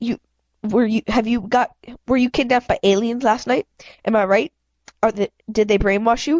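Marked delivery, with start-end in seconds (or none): none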